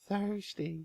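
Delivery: put-on voice pushed very high in pitch. Showing how the word is supposed to be said: high-pitched voice. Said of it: "That's about as high as my voice gets".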